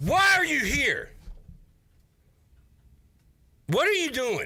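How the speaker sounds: very high, swooping fake angry voice. Confronting a co-host who came back after leaving, fake mad, mock anger. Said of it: "I'm doing the fake mad".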